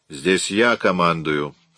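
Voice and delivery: snapped curtly. The officer in charge answers a colleague's mocking offer to help: snapped curtly. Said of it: "отрезал О'Коннор".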